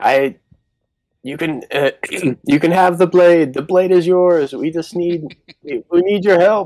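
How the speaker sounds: very high, loud shouting between breaths. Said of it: "And he's just calling out".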